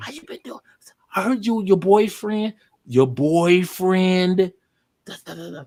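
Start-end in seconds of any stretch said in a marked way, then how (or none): 0.0-4.5 easygoing, laid-back, casual talk. Retelling a chat with another young woman while the others slept: retelling talking real slow. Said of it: "we start talking real slow".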